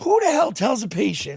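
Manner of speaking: mock angry yelling. Retelling yelling at a prosthetics fitter about pain: retelling own screaming. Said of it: "'cause I was screaming".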